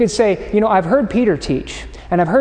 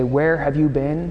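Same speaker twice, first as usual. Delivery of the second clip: faintly reproachful, slightly accusatory; 5 semitones lower, 4 dB quieter than usual. A parent asking their teenager who just came home, slightly accusatory. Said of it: "In a slightly accusatory tone".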